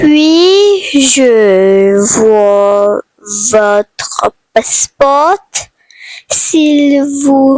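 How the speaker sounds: said slowly, at a slow pace. Saying airport sentences in French for learners to practise: said slowly. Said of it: "going to say slowly".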